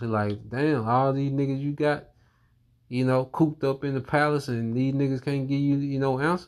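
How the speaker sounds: mocking, derisive taunting tone. Retelling how Daniel mocked the king's wise men: imitating Daniel mocking. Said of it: "Now he's mocking these magicians".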